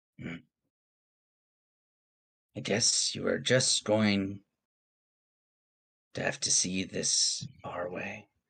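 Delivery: hushed, dark, almost whispering voice. In a dice-rolled story scene, the dark voice speaks, dark and almost whispering. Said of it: "the dark voice is like almost whispering".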